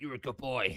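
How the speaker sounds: deliberately dumb, silly, put-on character voice. Offering to do a voice for someone, done as the Driggs voice. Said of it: "Give you the Driggs voice".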